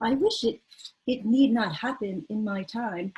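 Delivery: very innocent voice, pure innocence. Retelling Frodo's line to Gandalf from Lord of the Rings: innocent Frodo voice. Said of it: "in a very innocent voice".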